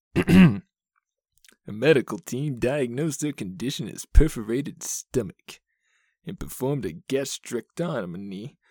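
put-on cartoon character voice. Reading a medical case aloud in a cartoon voice, Zapp Brannigan voice. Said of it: "Let's read this in the voice of the Zap Brannigan from Futurama".

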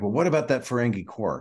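put-on accusatory tone. Retelling what a character says about Quark: imitating an accusatory tone. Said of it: "very accusatory".

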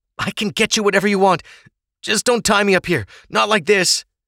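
very high, groveling, shivering, moaned pleading. The man speaks to Ava, who glares at him: moaning, shivering. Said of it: "The man moaned with a shiver".

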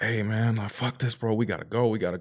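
put-on panicked tone. Retelling what a man said after an explosion, imitating a man freaking out. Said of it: "he was freaking out".

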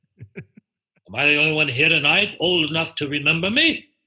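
showy, loud, grand drag-act diva voice, played big. Performing a stage bit of impressions for the audience: Tallulah Bankhead voice. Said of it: "the thing with Tallulah, when I go".

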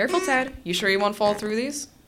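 light, playful, teasing tone. Tanvir teases Ted as the porch boards creak under them: teasing. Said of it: "Tanvir teased".

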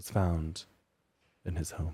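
dramatic, suspense-building storyteller delivery. Telling a story to a listener, the speaker reveals a detail: dramatic, suspenseful delivery. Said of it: "Why did you say it like".

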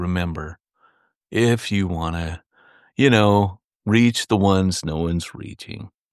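slow, sad, low-energy, downbeat delivery. A co-host imitates how the show's host sounds when closing the episode, mock-sad. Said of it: "excited to get it going".

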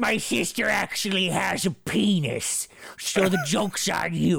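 put-on, imitated lady voice. Reading aloud a letter from the movie in the voice of the grizzly lady. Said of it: "in the voice of the grizzly lady".

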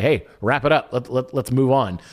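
ordinary delivery

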